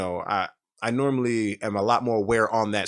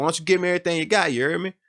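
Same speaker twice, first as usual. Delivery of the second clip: put-on New Orleans accent, pitched higher; 7 semitones higher than usual. Retelling being robbed on the street, quoting the robber: New Orleans accent. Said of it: "you could tell he was from New Orleans 'cause of his, uh, accent".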